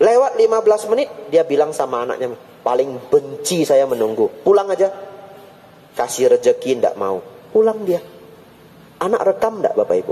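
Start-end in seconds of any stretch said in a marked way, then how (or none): none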